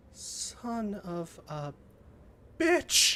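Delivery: hushed, very quiet, under-the-breath delivery. A player voices their character's line during a tabletop roleplay scene, very quietly. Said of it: "very quietly".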